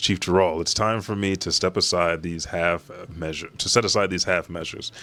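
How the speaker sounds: ordinary delivery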